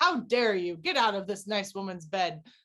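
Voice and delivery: ordinary talk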